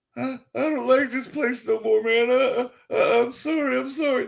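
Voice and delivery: crying, broken-down voice, high and tearful sobbing. Retelling how a frightened man reacted, imitating someone crying and shaking. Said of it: "started shaking, started crying".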